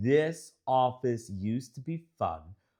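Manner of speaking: ordinary delivery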